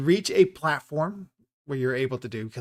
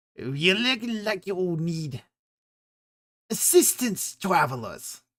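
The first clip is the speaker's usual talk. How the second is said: high goblin creature voice; 6 semitones higher than usual. The narrator voices a goblin who comes up to the travelers: goblin voice. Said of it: "he comes up to you and goes".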